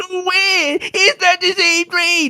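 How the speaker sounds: put-on slow, drawn-out, very high crying baby whine. Mocking a friend's protest: imitating a whining baby. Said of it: "kicking and screaming like a little baby".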